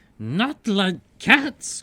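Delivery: impassioned squeal, very high and loud. A narrator reads the mouse's reply to Alice, shrill and passionate. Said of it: "cried the mouse in a shrill, passionate voice".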